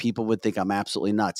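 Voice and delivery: plain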